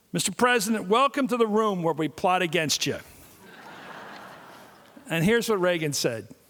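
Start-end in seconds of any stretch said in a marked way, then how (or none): none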